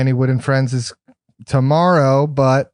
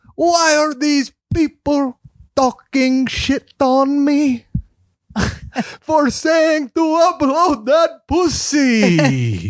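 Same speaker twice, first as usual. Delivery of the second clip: very high pitch, slow drawl, ending dragged out; 13 semitones higher than usual. Doing an impression of Ari Matti holding the mic: Ari Matti impression. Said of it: "So my impression is".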